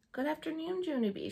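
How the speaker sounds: sweet, high, sugary voice. Mrs. sits beside junie b. and greets her, very nice voice. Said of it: "she said in a very nice voice".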